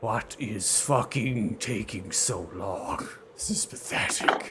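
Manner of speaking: loud, guttural creature voice pushed from the throat. Narrating the climb to the players, narrator speaks as Tresgal in a guttural voice. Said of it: "You hear the guttural voice of Tresgal speak".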